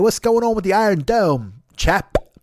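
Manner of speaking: laid-on London Cockney accent. Comparing his line to a british spy show, doing a cockney accent. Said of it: "I can do a Cockney accent and say".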